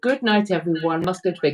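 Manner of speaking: plain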